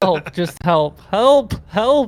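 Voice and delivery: full-throated, very loud, booming, rising yell. Game master going over a player's character's actions, retelling a yell for help. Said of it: "and you're yelling help?".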